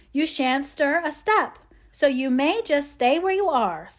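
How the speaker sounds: irritated, cross scolding tone. Joe, having just pricked her finger in a hurry, answers: cross scolding. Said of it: "scolded Joe, crosser than ever".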